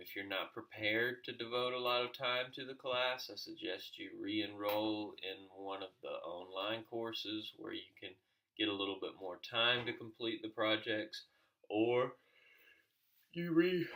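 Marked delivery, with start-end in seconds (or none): 11.7-13.9 words swallowed by a loud, high yawn. Explaining the class's time demands to students early in the day: yawning mid-sentence. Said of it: "I'm yawning".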